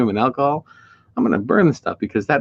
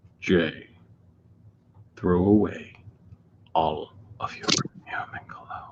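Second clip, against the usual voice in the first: breathy, hushed voice with a commanding tone; 6 semitones lower, 8 dB quieter than usual. Showing how an order would sound to Jay, in a James Earl Jones voice. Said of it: "in the James Earl Jones voice".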